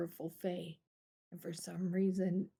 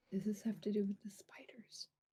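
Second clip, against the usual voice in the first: whispering on the side; 5 dB quieter than usual. Narrating a scene, the speaker gives one character's whispered aside to another. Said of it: "Rhoda will whisper to Gar".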